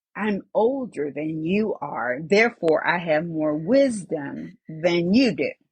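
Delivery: grave, solemn, low and serious voice. Quoting a spiritual mother's words to the speaker, imitating her serious voice. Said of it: "in her serious voice".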